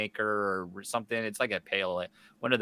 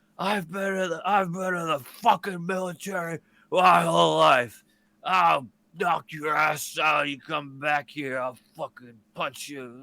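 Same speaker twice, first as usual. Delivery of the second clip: mock drunken angry yelling, higher, louder; 7 semitones higher, 8 dB louder than usual. Retelling a drunk man screaming down the street, imitating drunken angry yelling. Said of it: "the drunken yelling starts".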